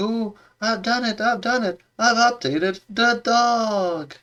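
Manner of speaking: mock, very high, triumphant, proud voice, "dog" stretched. Retelling how the Orion girl storms in about the dog: imitating a proud boast. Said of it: "she's super proud".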